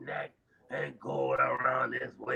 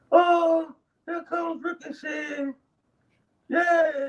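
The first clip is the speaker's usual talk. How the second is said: mock unenthusiastic, flat, bored announcing, slow and level; 4 dB louder than usual. Imitating the ring announcer introducing Ricochet: imitating a flat, unenthusiastic announcement. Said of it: "she be like".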